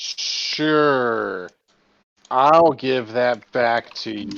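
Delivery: loud, slow, drawn-out, dripping heavy sarcasm. Voicing a character who agrees to give something back: very sarcastic. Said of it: "she says very sarcastically".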